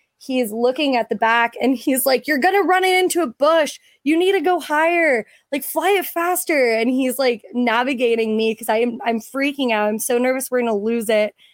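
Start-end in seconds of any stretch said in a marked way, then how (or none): 2.3-6.7 high, nagging, mild half-yell. Retelling a friend in the Jeep's back seat directing the drone, imitating a friend screaming. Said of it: "screaming at me the entire time".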